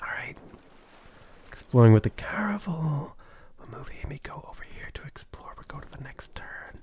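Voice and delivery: soft, breathy, murmured whisper. Whispering to chat while playing, throat sore: whispering. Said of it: "I'm gonna, like, whisper to chat".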